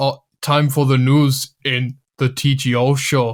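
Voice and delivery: put-on Austrian accent. Showing a basic Arnold Schwarzenegger accent during a chat: Arnold Schwarzenegger accent. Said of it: "basic accent".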